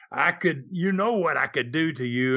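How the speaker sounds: imitated loud talking. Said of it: "he talks loud".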